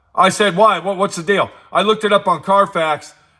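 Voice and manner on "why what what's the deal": normal talking voice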